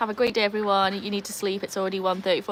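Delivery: ordinary delivery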